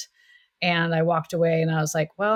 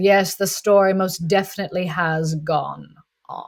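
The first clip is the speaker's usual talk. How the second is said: dry, very droll put-on British accent; 4 dB louder than usual. Retelling an audition where the man behind the table replied, droll british accent. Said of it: "in a very droll British accent".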